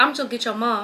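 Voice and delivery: ordinary talk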